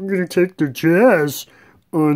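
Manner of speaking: wise alien voice, high and slow. Speaker runs through game picks quickly, trying a Yoda voice. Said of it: "in my Yoda voice".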